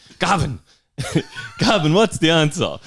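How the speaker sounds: acted sharp snap, very high and swooping. Retelling how the teacher called on a classmate: imitating a teacher snapping. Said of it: "she snapped at him and was like".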